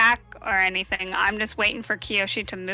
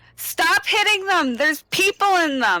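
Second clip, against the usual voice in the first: loud yelling in a character voice; 10 semitones higher, 5 dB louder than usual. Playing a character who warns the others in a fight: in-character yell. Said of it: "I just yell that".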